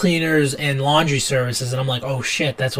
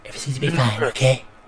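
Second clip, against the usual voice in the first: put-on soothing politician voice. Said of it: "Soothing Trump voice".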